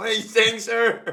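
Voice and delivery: high, loud, baffled, confused voice.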